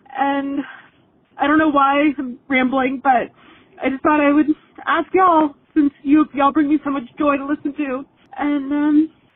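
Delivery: tearful, speaking through tears, crying while talking. Listener leaving a voice message for the hosts, crying while talking. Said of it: "Sorry, I'm crying".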